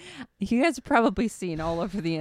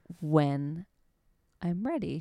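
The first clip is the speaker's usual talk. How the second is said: put-on slow, restrained, held-back delivery. Retelling how she spoke with restraint: imitating slow restrained speech. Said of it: "she spoke so slowly".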